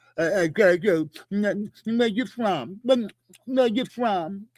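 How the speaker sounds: put-on mumbling, words mushed as if mouth full. Retelling a confrontation and mocking the other man: imitating someone talking with a full mouth. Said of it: "It sound like he got a bunch of shit in his mouth".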